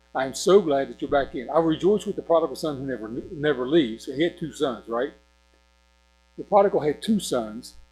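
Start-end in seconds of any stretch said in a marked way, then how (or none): none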